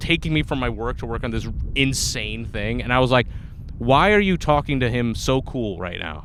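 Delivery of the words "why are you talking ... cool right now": angry, mad, accusing, confrontational tone. Retelling an angry question to a coworker: imitating own angry words. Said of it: "I was so mad at her".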